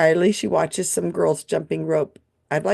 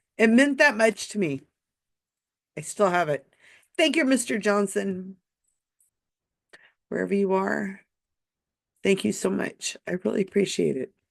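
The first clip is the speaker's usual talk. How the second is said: choked-up, tearful voice; 3 semitones higher, 3 dB quieter than usual. Thanking a teacher who gave the speaker a book in 1971: tearing up. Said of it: "I'm tearing up thinking about this teacher".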